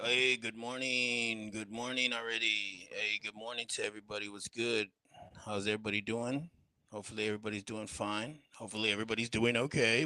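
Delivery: all chill, laid-back, casual, easy tone. Acting out a morning greeting to viewers: imitating a chill greeting. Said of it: "I'm all saying it all chill".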